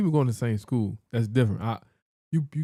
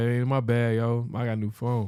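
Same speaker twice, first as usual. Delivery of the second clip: ordinary talk, nothing marked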